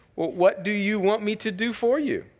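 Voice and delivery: teasing, playful, tongue-in-cheek sarcasm, lifted pitch. Reading aloud a question Jesus asks his disciples: playful sarcasm. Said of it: "you can almost sort of see the playful sarcasm".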